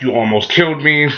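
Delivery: ordinary talk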